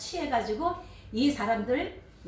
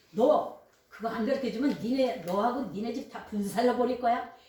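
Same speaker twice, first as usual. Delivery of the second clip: ordinary talk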